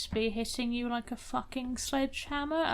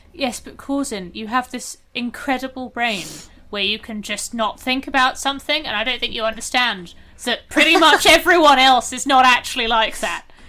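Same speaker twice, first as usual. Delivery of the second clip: irritated snapping, higher and louder; 4 semitones higher, 14 dB louder than usual. Answering corzin in character, snapping at them. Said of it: "I didn't mean to snap at you".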